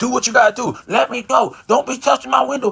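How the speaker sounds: high, screaming, defiant voice. Retelling a driver screaming at a cop, imitating someone screaming. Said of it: "and then still screaming".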